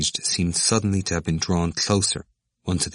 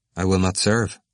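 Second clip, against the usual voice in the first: plain reading voice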